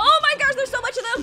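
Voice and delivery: panicking voice. Streamer caught in chaos while playing a game, panicking. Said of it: "I am panicking".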